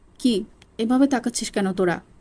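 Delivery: plain reading voice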